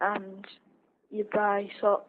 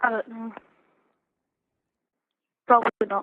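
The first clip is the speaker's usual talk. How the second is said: glum, down-hearted, sad and dejected voice; 5 dB louder than usual. The speaker, asked whether a bad school day will affect a review: sad. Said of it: "You sound very sad".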